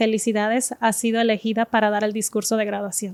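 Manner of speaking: ordinary talk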